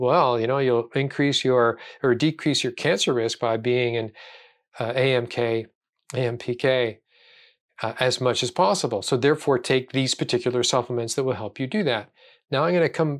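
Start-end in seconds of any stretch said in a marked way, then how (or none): none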